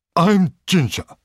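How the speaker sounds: mean, spiteful tone. A mare speaks to the narrator, newly moved into her box: nasty voice. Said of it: "she said in a nasty voice".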